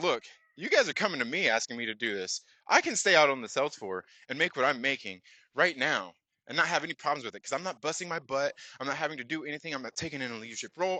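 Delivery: ordinary delivery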